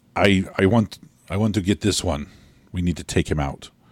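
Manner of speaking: put-on very thick, heavy foreign accent, barely English. Describing a man's voice in the scene, then speaking as him, very thick foreign accent. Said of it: "very thick, barely English speaking accent".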